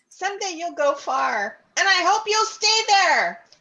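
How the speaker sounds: very loud, high, taunting, insulting yell. Voicing a character mocking a snake in battle: character yelling an insult. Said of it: "she's gonna yell".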